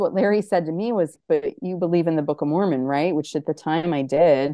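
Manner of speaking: ordinary talk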